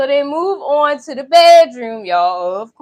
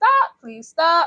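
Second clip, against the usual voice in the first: mock pleading through tears, tearful and crying; 4 semitones higher, 4 dB quieter than usual. Retelling a movie scene, a woman begging: imitating a crying plea.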